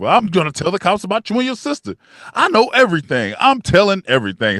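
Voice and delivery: put-on cocky swagger. Retelling a TV character's threat to a killer: imitating cocky bulletproof talk. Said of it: "talking like he was bulletproof".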